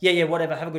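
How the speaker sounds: loud, cold, dismissive tone. Acting out payback to her for being cold: acting cold and dismissive. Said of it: "I'll be so cold back. I'll be like".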